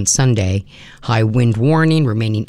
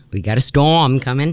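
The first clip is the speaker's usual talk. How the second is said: put-on New England Boston fisherman accent; 4 semitones higher than usual. A radio host telling listeners a storm is coming, in a put-on Boston accent. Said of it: "I put a Boston accent on that".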